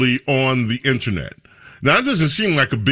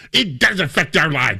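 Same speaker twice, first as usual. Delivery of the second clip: snide, snarky, mocking sarcastic tone; 3 semitones higher than usual. Quoting someone's remark, deliberately delivered snarky though she wasn't, snarky. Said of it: "I'm going to do it snarky".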